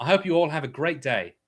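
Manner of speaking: put-on British accent. Asked to demonstrate before another person tries it, saying a line in a British accent. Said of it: "read the comment in a British accent".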